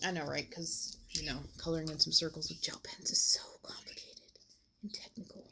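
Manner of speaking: hushed whisper. Coloring circles with gel pens on camera, the speaker talks to viewers, whispering. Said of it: "I don't know why I'm whispering".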